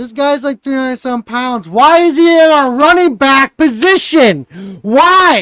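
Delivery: top-of-the-lungs shriek, very high and loud. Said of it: "I'm screaming at the top of my face".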